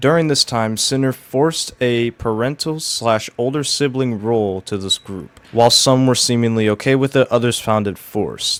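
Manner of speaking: usual speaking voice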